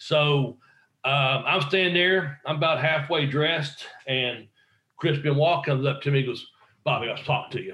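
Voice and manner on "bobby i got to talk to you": real intense, in-your-face, right up close. Retelling what Chris Benoit said in the speaker's face: imitating Chris Benoit, intense. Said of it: "real intense".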